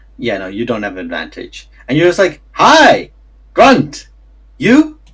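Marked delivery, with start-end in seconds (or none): 2.5-4.9 halting, broken one-word giant-speak, pitched up. Acting out a character's greeting to giants: speaking in Giant. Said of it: "You say this in Giant".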